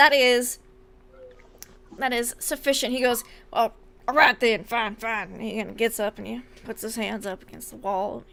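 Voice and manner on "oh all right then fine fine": mock reluctant, grudging grumble. Voicing a prisoner who gives in to the guard: grumbling. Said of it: "he's just grumbling".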